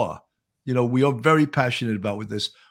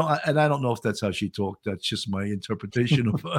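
plain

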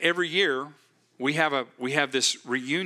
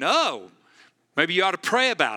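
mock scoffing, sarcastic, swooping sing-song; 4 semitones higher, 4 dB louder than usual. Retelling how an unbelieving man mocked the work crew: imitating a mocking man. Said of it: "he's mocking, going".

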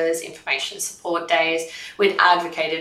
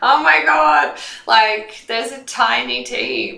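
mock talking through drawn-out laughter, high and swooping; 7 semitones higher, 7 dB louder than usual. Retelling answering callers asking for the marketing manager, retelling laughing speech. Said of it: "I'm like laughing".

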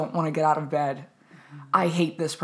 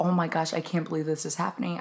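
mock panicked voice; 4 dB quieter than usual. Retelling running late for a rehearsal without the script: imitating own past panic. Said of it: "I was just, like, panicking".

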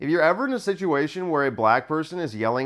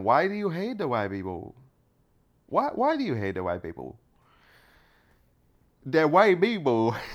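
fake Indian accent on English. Saying what he wanted to ask the young man: put-on indian accent. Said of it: "Now I'm doing Indian".

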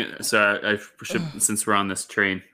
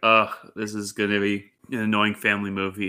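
ordinary delivery

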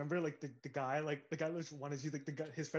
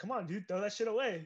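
acted bouncer yell, high, barking; 5 semitones higher than usual. Retelling a bouncer shouting at people in line: imitating a bouncer yelling. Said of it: "who's he yelling at?".

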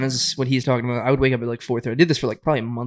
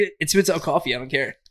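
usual speaking voice

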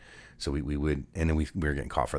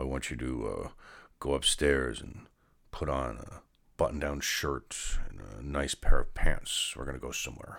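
acted, grave, foreboding, ominous, stern tone. Recalling the dad's words on coming home, imitating his ominous tone. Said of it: "my dad had ominous tones".

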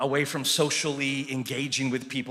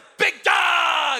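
put-on kid voice yelling, very high and loud; 9 dB louder than usual. A dad retelling how his boy shouts to him, imitating a kid shouting. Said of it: "And he shouts it".

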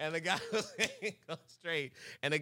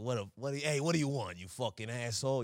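mock New Jersey guy accent; 5 semitones lower than usual. Acting out a rude American guy answering a customer, New Jersey accent. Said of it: "some dingy American guy from New Jersey comes up and".

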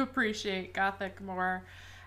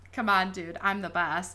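put-on snarky retort tone. Retelling how a detective answered a doctor: imitating a snarky retort. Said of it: "he was all, like, snarky".

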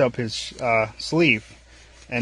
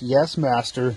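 imitated sarcastic robot voice. Retelling a droid's reply to Lando, imitating sarcastic droid. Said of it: "being all sarcastic with him and stuff".

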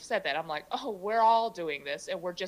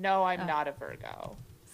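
hurt, put-out, slow and upset delivery. Answering another speaker's question about being a virgo, sounding upset. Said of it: "you said that so upset".

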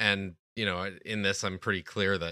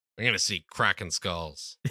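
ordinary delivery

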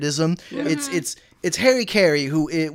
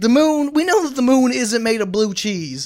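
put-on announcer voice, higher and louder; 8 semitones higher, 6 dB louder than usual. Retelling a comedy sketch about a space show: Harry Caray impression. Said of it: "Harry Carey has an outer space show".

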